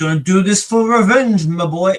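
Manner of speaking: very loud, high-pitched Irish man's voice. Quoting Dancer while discussing a revenge story, Dancer's Irish accent. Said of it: "I just hear Irish man in varying degrees".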